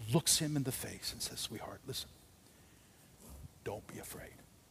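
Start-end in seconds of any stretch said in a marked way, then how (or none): 1.4-4.3 tender, gentle, loving whisper. Acting out a father comforting a crying child: gentle, loving father comforting. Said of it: "a loving, gentle father".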